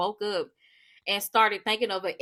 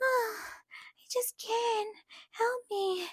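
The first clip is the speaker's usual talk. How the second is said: very high, mocking damsel-in-distress baby voice; 11 dB quieter than usual. Speaker mocks a woman who is getting on their nerves: mocking a high baby voice. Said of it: "that baby voice and that high pitch".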